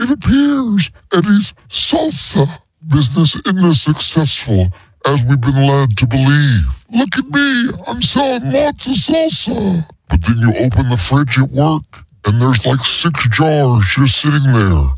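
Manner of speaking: altered, disguised voice with swooping pitch. An anonymous tipster's message is played on the show, in a disguised voice. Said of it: "They have changed their voice".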